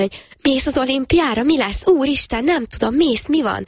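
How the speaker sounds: put-on, high, over-the-moon excited gushing. Retelling a family member's phone call, imitating a very enthusiastic tone. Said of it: "ilyen nagyon-nagyon lelkesen".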